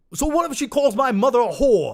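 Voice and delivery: really bad Scottish accent, high and very loud. Asked for a Roadhouse impression, doing a bad Conor McGregor impression. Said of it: "Was that a really bad Scottish accent?".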